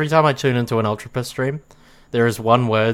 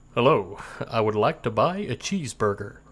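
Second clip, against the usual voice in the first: soft, tentative put-on American accent; 6 dB quieter than usual. Given a sentence to say by the other speaker, trying out an American accent. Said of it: "how is my American accent?".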